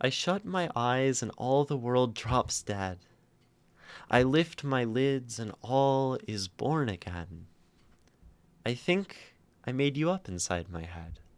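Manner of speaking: happy, joyful, sweet tone. Reading a poem aloud to show how it feels different: happy, sweet reading. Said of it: "try to read this like a happy poem".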